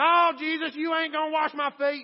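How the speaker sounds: very high, shrill, loud rural Southern voice. Speaker imagines Peter answering Jesus, in a redneck Peter voice. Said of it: "He was a redneck fisherman".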